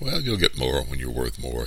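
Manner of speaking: ordinary delivery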